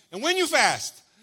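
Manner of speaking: loud, swooping, sassy delivery. Paraphrasing a Bible passage, reading it with put-on sass. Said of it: "I'll read it with a little bit of sass".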